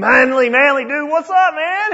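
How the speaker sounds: mock very high, rough, loud, boisterous bellow. Retelling running into a friend in the woods by El Capitan: imitating Rich's bellowing voice. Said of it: "loud, boisterous, rough voice bellowing".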